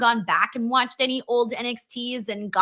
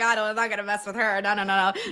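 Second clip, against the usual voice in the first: put-on scared, frightened voice; 3 semitones lower than usual. Retelling how Becky reacted: imitating a scared Becky. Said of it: "Becky was so scared".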